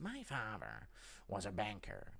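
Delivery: very slow, low, hushed, swooping drawn-out drawl. Answering a request for an impression, doing a Joker impression. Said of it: "Joker impression".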